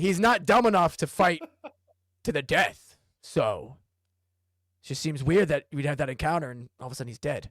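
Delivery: wary, questioning, suspicious character voice.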